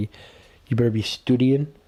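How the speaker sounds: put-on bad, clumsy English accent. Joking about what someone would say: bad english accent. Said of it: "if he had a bad English accent, he would say".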